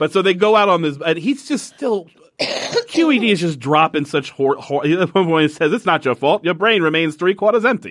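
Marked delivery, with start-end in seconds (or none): 5.7-7.9 put-on rapid old-timey 1930s newsreel reporter patter. Recounting a man's remark in a story, in a 1930s reporter voice. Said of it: "30s reporter voice".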